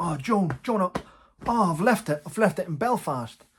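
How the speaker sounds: frantic blurting, loud, high and flustered with panic. Retelling how the dad reacted at the palace gate: imitating a panicking dad. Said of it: "my dad panicking, going".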